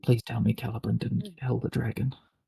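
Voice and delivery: whispered character voice. Voicing a character holding another's hand: whispering in character.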